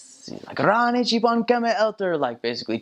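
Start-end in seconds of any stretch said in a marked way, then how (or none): 0.6-2.2 put-on drunk man's screaming, higher. Retelling a drunk man threatening missionaries: imitating a drunk man yelling. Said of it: "he was yelling at us and screaming at us".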